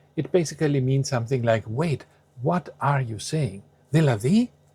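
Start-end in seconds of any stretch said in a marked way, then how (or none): 4.0-4.5 δηλαδή lifted with rising pitch. Explaining uses of a greek word: rising pitch on δηλαδή. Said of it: "if you say it with a rising intonation".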